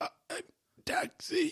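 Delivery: hoarse, rasping, croaky, almost-gone voice. Retelling how the other speaker sounded after losing his voice: imitating a hoarse lost voice. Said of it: "your voice was like".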